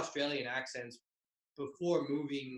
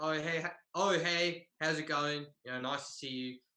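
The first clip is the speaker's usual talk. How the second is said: put-on Australian accent throughout. Retelling greeting a high school teacher in a put-on Australian accent. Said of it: "I used my Australian accent".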